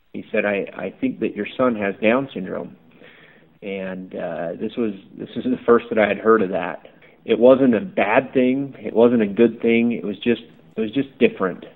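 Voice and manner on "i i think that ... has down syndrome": imitated very quiet voice. Retelling what the doctor told him after the delivery: imitating a very quiet voice. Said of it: "just said in a very quiet voice".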